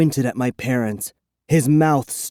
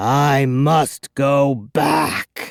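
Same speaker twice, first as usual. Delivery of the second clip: very slow, drawn-out, rasping vampire voice. A man looming over the narrator announces he must go back, rasping. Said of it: "he rasped".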